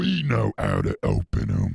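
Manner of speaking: cocky, swaggering, gruff, very deep orc voice. A warrior orc protests to his superior that his crew can open the doors too. Cocky, rough orc voice. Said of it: "That was why [name] was second in command, ... I'm talking in Umi, ain't I? And I'm making my voice squeaky, ain't?".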